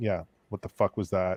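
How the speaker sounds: ordinary talk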